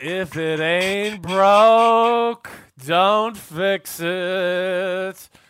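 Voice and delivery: very slow, loud, drawn-out preachy sermon-like drawl.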